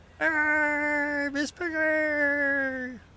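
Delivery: "Arr" stretched and pitched very high. The speaker addresses Miss Piggy in a bad Kermit the Frog impression. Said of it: "that's a really bad Kermit the Frog impersonation".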